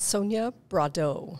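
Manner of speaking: pronounced in a French-sounding way. Introducing the podcast guest, saying her name with a French-sounding pronunciation. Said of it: "Kind of French".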